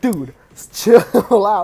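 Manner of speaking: loud, play-acted pleading through laughter.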